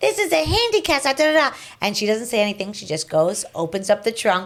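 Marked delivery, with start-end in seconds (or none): 0.0-1.6 high, mock, shrieked screaming. Retelling how a man in a parking lot yelled: imitating a man screaming. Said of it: "starts screaming at my mom".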